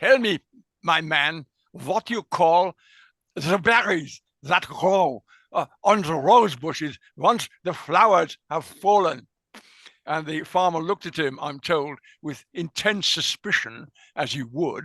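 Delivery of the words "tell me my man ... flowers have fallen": put-on heavy Swiss German accent throughout. Telling an anecdote, quoting a man questioning a local farmer: strong Swiss German accent. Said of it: "with his strong Swiss German accent".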